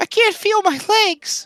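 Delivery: small, squeaky, very high tiny voice. Answering the question of what kind of stuck, in a small voice. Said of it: "It is a small voice".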